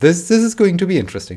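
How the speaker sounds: high, loud, fast, ironic, excited voice.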